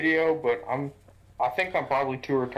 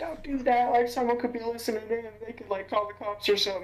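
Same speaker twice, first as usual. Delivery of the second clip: acted, very high, shrill scolding yell; 9 semitones higher than usual. Retelling how mom scolded them for using the walkie-talkie: imitating mom yelling. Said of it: "yelling at me. She's like".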